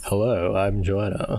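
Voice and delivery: fake, polished, put-on radio announcer voice. Asked about her radio voice, the speaker demonstrates it: put-on radio voice. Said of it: "That was a good impression of me".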